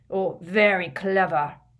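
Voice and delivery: loud, gruff, growled delivery. Reading a story aloud, a character answering a cheeky student: growling. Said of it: "growled Hagrid".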